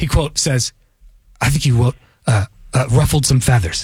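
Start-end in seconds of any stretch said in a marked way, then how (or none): 1.4-3.8 low, creepy, breathy delivery. Quoting what someone said about the interview: creepy imitation of Court. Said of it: "You said it creepy, just like that".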